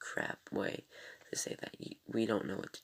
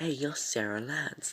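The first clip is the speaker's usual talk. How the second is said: clumsy, raised, put-on British accent, louder; 6 semitones higher, 5 dB louder than usual. Retelling a TV scene, voicing Constantine: attempted British accent as Constantine. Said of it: "I can't do it, British".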